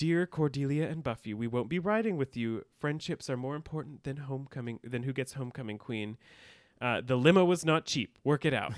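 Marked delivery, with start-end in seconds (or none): none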